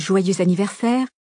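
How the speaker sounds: ordinary delivery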